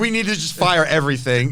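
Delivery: ordinary talk, nothing marked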